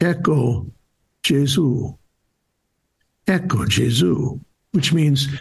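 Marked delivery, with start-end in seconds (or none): 0.0-4.4 slow, hushed stage whisper. Retelling how a father pointed to the host for his son: imitating a half-whisper. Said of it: "I hear the dad whisper to his son".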